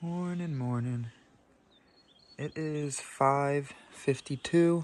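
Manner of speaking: hushed, slow, soft half-whisper. Early morning, people still sleeping in the hut, speaker half-whispering. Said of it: "I'm trying to whisper".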